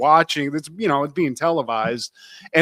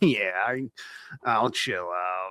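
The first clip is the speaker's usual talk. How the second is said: deep, slow, laid-back delivery; 7 semitones lower, 12 dB quieter than usual. Retelling a cartoon scene, quoting the hero's reply: Wolverine voice. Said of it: "He's like".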